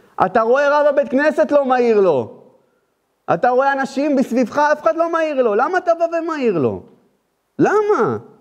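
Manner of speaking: high, rising, rebuking, preacher-style voice.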